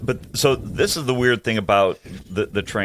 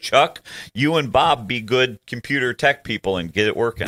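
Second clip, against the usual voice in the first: ordinary talk, nothing marked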